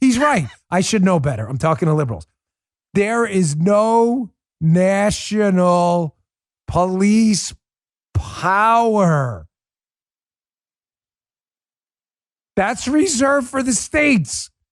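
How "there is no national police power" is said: very slow, drawn-out, mocking spell-it-out delivery. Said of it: "I'll say it very slow".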